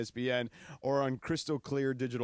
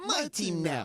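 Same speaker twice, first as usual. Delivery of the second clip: tiny, high, play-acted little voice; 6 semitones higher than usual. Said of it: "that little voice you did".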